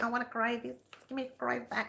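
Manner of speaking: pushy, demanding, whiny voice. Retelling what customers keep asking: imitating demanding customers' voice. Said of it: "And they even use that voice".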